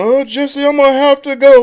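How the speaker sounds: high, loud, drawn-out phone voice. Imitating Martin on the phone: imitating Martin on the phone. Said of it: "He's like, on the phone".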